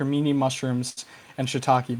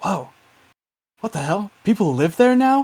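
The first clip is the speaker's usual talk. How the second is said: androgynous voice, higher and louder; 6 semitones higher, 6 dB louder than usual. Voicing the person on the other end of the phone: very androgynous voice. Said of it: "a very androgynous voice".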